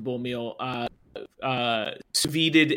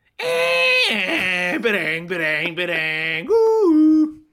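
dial-up modem sound impression, higher and louder; 7 semitones higher, 5 dB louder than usual. Imitating an old computer connecting: dial-up modem sound impression. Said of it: "That was a perfect impression".

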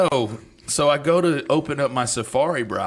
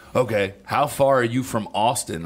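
plain

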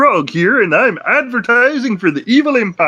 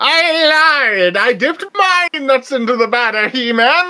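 high cartoon-baddie voice, "I" stretched out; 5 semitones higher than usual. Imagining Skeletor being friendly to He-Man, doing a Skeletor impression. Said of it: "boring Skeletor impressions".

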